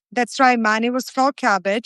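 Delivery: plain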